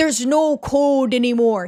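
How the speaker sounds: put-on strong, laid-on Canadian accent. Describing an actor's character and quoting how he talks: Gerard's Canadian accent. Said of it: "He speaks like that because this actor is Canadian".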